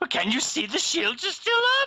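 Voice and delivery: high, piercing mock scream.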